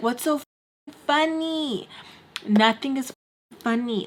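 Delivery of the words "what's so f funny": furious, fed-up, livid, high-pitched. Retelling asking others why they were laughing: retelling own livid question. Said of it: "I was so livid".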